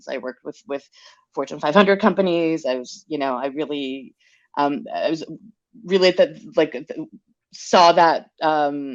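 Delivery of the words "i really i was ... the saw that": very slow, halting, stuttering ramble. Telling someone about their work with big brands, stuttering. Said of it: "I'm stuttering".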